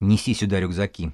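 plain

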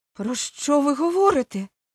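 high, loud exclamation, each word drawn out. A young woman reacts to a man's hurried declaration of love, exclaiming. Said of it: "вигукнула молода жінка".

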